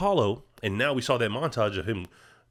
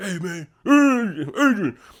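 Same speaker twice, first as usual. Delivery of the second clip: very slow, loud, stretched-out high yell; 9 semitones higher, 7 dB louder than usual. Retelling a film scene where one fighter insults the other's wife: imitating Rocky yelling. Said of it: "yelling at him".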